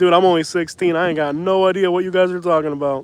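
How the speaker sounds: ordinary delivery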